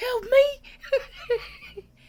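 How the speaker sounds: very high, laughing, squealing plea.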